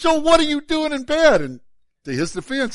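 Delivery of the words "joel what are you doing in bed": very high, very loud, shrill, booming scolding yell. Retelling yelling at someone who went back to bed: imitating own past yell. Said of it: "I yelled at him again".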